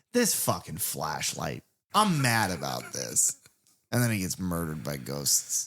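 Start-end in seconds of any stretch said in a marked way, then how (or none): 0.2-3.4 animated delivery with wildly swinging pitch. Retelling a film scene, imitating Dan the weatherman. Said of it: "And he's like".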